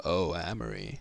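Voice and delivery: deep, low put-on voice. Taking a turn at the line, using a deep voice. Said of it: "I'm gonna use my deep voice".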